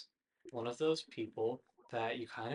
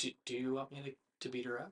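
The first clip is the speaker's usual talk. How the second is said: hushed, close, leaning-in half-whisper; 3 dB quieter than usual. Voicing Cena as Cena leans in to another character, half-whispering. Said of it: "Cena leans in and whispers".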